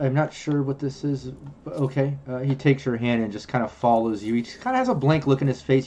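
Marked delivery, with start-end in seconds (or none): 0.0-2.2 puzzled, confused, uncertain tone. Voicing the hologram man agreeing to follow: confused. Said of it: "You can tell he's confused".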